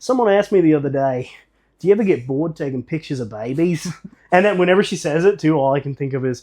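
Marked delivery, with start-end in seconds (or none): 0.0-3.9 exaggerated put-on Australian accent, done for show. Retelling what a photographer of babies said about a question she was asked, put-on australian accent. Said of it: "I'll do it in Australian".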